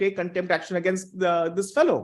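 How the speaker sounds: plain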